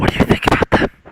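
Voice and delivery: unvoiced whisper.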